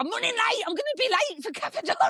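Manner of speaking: very high, airheaded, ditzy northern English voice. Retelling a morning after a robbery, quoting a girl: imitating Danny, ditzy northern voice. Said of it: "really ditzy anyway and really northern".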